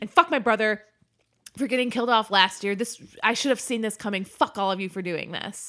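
huffy, angry hissy-fit outburst like a tantrum. Retelling an actor's angry rant at his castmates: imitating a hissy fit. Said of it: "He has a hissy fit".

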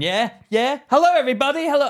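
very high, loud compere-style announcer voice. Imitating the other speaker as MC at gigs: imitating an MC greeting a crowd. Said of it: "'cause you're the M C".

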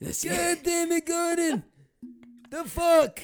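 very high puppet voice, pitched way up. Quoting the police chief in a movie as he addresses Gordon, in a Muppet voice. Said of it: "police chief in the movie that has like a Muppet voice".

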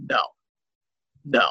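put-on bone-dry, dead-serious deadpan, no reaction. Speaker retells a guy's reply to a friend's congratulations: imitating a deadpan reply. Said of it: "looks at him deadpan and goes".

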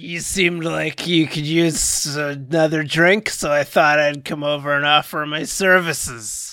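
put-on slurred character voice. Arriving at a party to offer another drink, slurred Kane voice. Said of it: "but also slurred".

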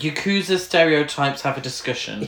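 ordinary talk

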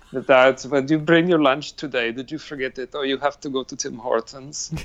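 fake angry Russian accent. Talking to the Russian man they married, mock-angry Russian accent. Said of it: "sounding like this mad angry Russian".

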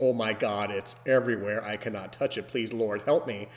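ordinary delivery

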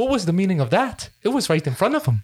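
put-on convincing Irish accent. Recounting a favorite movie scene to a co-host, in Seamus's Irish accent. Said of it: "Excellent Irish accent".

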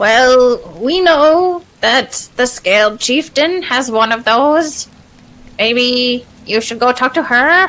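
creature voice with a drawn-out opening. Game master voicing an ooze mephit to the players, ooze mephit voice. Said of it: "This is an ooze mephit".

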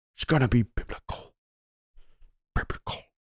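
breathy, words rolled smoothly off the tongue. Quoting a movie line as Gerard Butler: Gerard Butler voice, rolling the words. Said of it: "He rolls it off his tongue".

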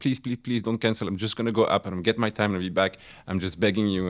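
frantic, terrified, desperate pleading. Retelling a plea to a driver not to cancel: imitating a terrified plea. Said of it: "I was terrified of losing him".

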